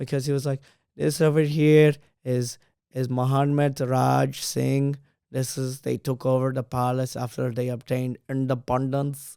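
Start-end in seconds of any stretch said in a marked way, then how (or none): 1.0-9.4 put-on tour guide style Indian English accent. Retelling what a palace tour guide said: Indian accent. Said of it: "he said one certain word in an Indian accent".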